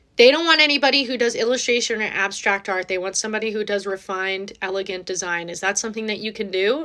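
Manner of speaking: ordinary talk, nothing marked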